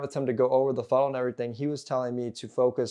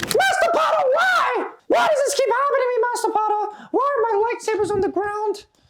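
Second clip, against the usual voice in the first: very high, loud, raised creature voice; 7 dB louder than usual. Speaking as the house-elf to Master Potter, in a Dobby voice. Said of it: "I won't talk like Dobby too much".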